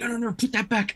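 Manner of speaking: hissing under breath. Speaker imagining Kingsley warning someone, in Kingsley's quiet hiss. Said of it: "the quiet, like hissing".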